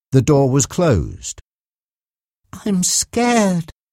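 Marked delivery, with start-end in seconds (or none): 2.5-3.6 small, subdued, slightly high voice. Mark speaks to Reggie at a closed door, quietly. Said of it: "Mark said quietly".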